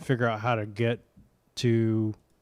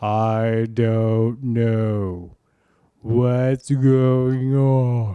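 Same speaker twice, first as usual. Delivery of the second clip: loud, very slow, exaggerated fake drunken drawl; 7 dB louder than usual. Showing how your own voice sounds with an echo: mock drunk voice. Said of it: "sounds like a drunk version of you".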